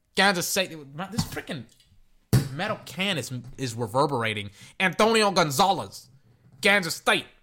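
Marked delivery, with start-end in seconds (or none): 4.8-7.3 put-on Spanish-speaking accent.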